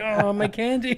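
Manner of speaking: mock dismay, high, loud laughing wail. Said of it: "It's like".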